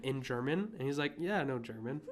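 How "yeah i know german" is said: plain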